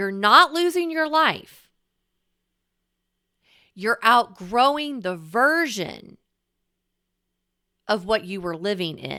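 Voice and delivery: deliberately very slow delivery. Speaking to the listener's unconscious part, speaking very slowly. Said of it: "I am speaking very slowly".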